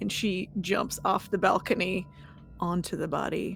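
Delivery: plain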